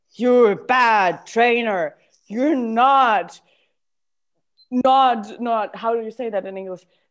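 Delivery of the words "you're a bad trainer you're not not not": very slow, harsh, critical voice. Voicing the critical inner voice after being asked for its tone: inner critic's voice. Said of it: "What is the tone of the voice".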